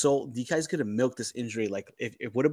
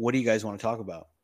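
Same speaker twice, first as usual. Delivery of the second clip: put-on sarcastic delivery. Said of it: "he said it so sarcastically".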